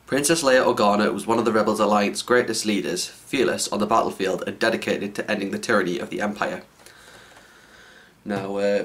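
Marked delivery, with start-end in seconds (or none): none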